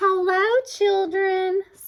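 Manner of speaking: sweet gentle tone. Someone in the hall greets the waiting children, sweet voice. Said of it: "someone said in a sweet voice".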